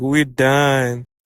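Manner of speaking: normal talking voice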